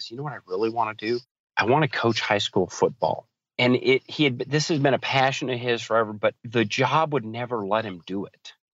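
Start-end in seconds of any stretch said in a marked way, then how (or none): 0.1-3.3 confiding, secret-sharing tone. Retelling what a coachee said in a coaching conversation: imitating someone speaking quietly. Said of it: "real quietly says".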